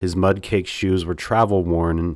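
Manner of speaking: plain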